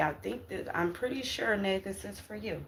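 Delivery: soft, tearful voice, crying through the words. Speaking to someone on a live broadcast, crying. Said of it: "seeing that I'm crying".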